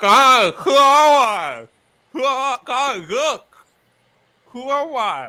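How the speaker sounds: very high, very loud, garbled mouth-full talk. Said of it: "put one of the swords in my mouth".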